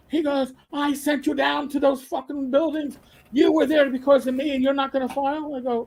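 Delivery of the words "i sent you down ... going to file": raised, put-on Irish brogue. Retelling what an old contact said on the phone, scolding you, in an Irish brogue. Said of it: "this Irish brogue".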